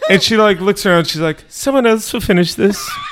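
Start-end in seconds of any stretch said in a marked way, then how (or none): 1.5-2.9 lifted, royal-sounding voice. Retelling a cake-cutting meme, imitating the Queen. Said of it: "that's what she sounded like".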